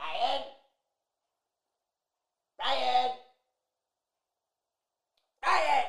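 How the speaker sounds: high-pitched shouted calls. A wife calls her husband, who has the telly on, shouting his name. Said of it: "I'll just shout him".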